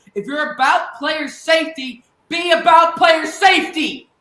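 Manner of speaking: furious, mad, very loud shouting yell. Commenting on teams' methods three games into the season, angry yelling. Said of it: "I'm yelling because I'm so mad".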